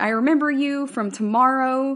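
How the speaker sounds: loud, high, sudden panicked blurt. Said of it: "starts freaking out".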